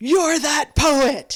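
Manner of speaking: huge, very loud voice. Retelling how a check-in worker recognized the speaker, huge voice. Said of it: "in like this huge voice goes".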